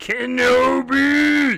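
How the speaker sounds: voice cracks, go stretched. Speaker choosing a character in a game, voice cracking. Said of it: "my voice cracked a little bit there".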